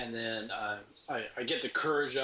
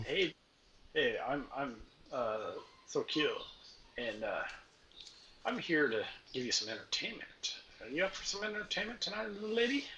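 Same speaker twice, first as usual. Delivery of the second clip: put-on drunken, lecherous barbarian voice; 3 semitones higher than usual. A storyteller voices the dwarf approaching a woman who greeted him: drunken lecherous dwarf Thokyo. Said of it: "drunken, lecherous, uh, barbaric dwarf coming her way".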